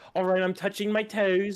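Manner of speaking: put-on British accent. Retelling copying a doctor's accent as a child: imitating a british accent. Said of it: "I'm starting to copy his accent".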